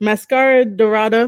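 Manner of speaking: words said in the most anglicised, heavy American way. Pronouncing a name in the whitest-possible american accent. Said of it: "That that's like me saying the most whitest way ever".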